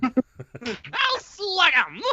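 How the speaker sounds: put-on cartoon puppy voice. Asked to do it again, repeating the Scrappy-Doo voice. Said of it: "Do it again".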